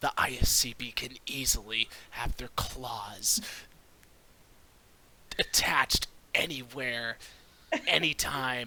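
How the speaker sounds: accusing tone spoken through gritted, clenched teeth. A storyteller voices a character's line, hushed through gritted teeth. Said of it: "he'll say with gritted teeth, but but trying to like say it all hushed".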